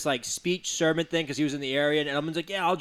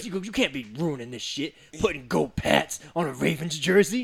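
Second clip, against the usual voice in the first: forceful whispered yell. Retelling an annoyed reaction to a signed jersey: imitating Ray Lewis's whisper yell. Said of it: "The whisper yell".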